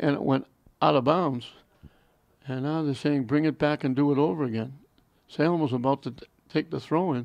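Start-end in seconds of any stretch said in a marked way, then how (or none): none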